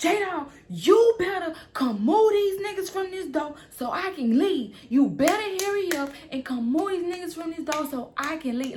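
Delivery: mock angry yell, pitched high, hollered. Speaker, stuck in an apartment, retelling shouting to J-Dog: retelling an angry yell. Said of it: "I started yelling back there".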